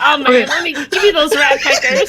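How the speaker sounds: silly, goofy, hammed-up put-on vampire voice. Retelling how the vampire talked: silly vampire voice. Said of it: "What the hell was that voice?".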